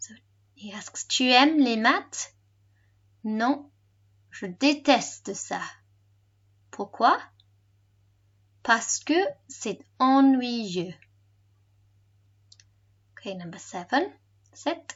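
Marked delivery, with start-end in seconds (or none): 1.1-10.9 slowed-down, clear, deliberate delivery. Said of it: "say it slower".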